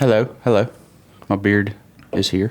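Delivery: fake, put-on English accent. Greeting the podcast listeners after being introduced: put-on English accent. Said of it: "English accent, huh?".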